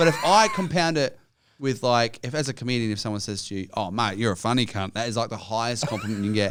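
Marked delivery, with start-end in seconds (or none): none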